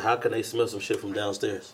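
ordinary talk

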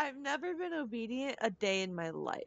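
in-character line broken by laughter. Voicing Lula, who laughs at being called obedient: laughing while speaking in character. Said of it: "Lula is going to laugh when he says obedient".

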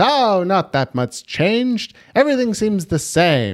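very high voice with swooping pitch. Retelling a TV preview line by line: John Mulaney impression. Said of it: "This is my John Mulaney impression".

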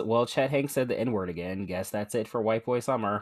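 plain

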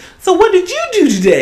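put-on very high, loud talk-down baby talk, little-girl voice. Showing how a parent might talk to a child: mock high-pitched little girl talk. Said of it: "little girl talk with the high voice".

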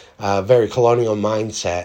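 ordinary delivery

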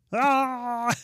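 high, drawn-out puppet shout, "ah" stretched very high. Shouting to get the message across, Kermit the Frog shout. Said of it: "I shout like Kermit the Frog".

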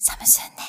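said quietly. Ending a made-up commercial with its closing tagline, said quietly. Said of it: "サムスンネをちょっと小声で言った".

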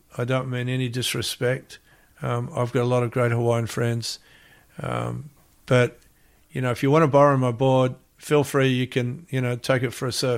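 ordinary delivery

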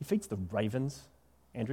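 put-on snide, snarky, sarcastic teenager voice. Showing the congregation how to say the line: sarcastic teenager tone. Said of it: "kind of the sarcastic".

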